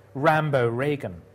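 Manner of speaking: ordinary talk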